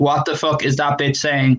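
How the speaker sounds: ordinary talk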